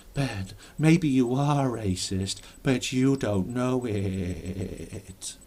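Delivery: very slow, hypnotic mind-control voice. Imitating people who tell the speaker he may be racist: mind control voice. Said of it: "That's my mind control voice".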